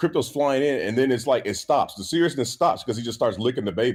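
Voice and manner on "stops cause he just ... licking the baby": ordinary talk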